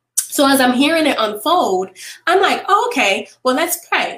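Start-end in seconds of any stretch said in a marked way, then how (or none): 2.7-4.2 play-acted breezy, unbothered, nonchalant offhand tone. Retelling own reaction to a friend's emergency call: imitating own nonchalant reply. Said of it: "I said it so nonchalantly".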